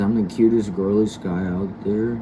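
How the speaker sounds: plain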